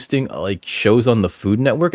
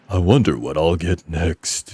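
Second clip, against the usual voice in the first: deep, lowered character voice; 4 semitones lower than usual. Voicing a male character's line, giving him a deeper character voice. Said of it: "I should give him a deeper voice".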